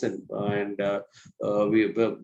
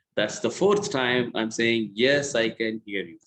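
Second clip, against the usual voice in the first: normal talking voice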